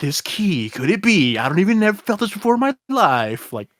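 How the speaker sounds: silly, dumb, goofy cartoon dub voice, pitched high. Showing how he voiced Gohan while reading, in a funny dumb Gohan dub voice. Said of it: "giving every character a funny, dumb dub voice".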